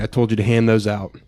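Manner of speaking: normal talking voice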